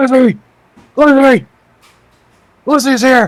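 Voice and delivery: very high, loud, shrieking scream. As you pull out your blade, he looks you in the eyes and screams. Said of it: "looks you dead in the eyes and screams".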